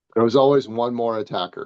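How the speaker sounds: ordinary talk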